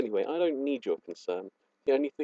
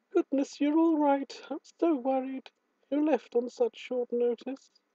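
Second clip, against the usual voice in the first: very high-pitched character voice; 13 semitones higher than usual. Doing a voice for Rosa while playing through the scene, Rosa voice. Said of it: "do I have to do a voice for Rosa".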